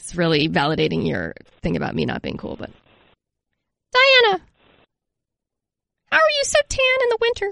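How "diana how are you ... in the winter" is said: very high, squeaky little dog or rat voice. Asking diana a question on behalf of the speaker's dog, imitating the dog's rat-like voice. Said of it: "and I do it in his voice".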